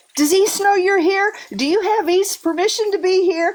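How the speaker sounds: yelling. Retelling asking someone if East allowed them there: imitating own past yelling. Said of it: "I was yelling".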